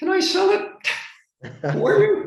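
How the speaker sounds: voice shooting up very high and drawn out. Speaker retelling their own words to a woman in a real estate story, voice way up high. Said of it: "my voice went up about seven octaves".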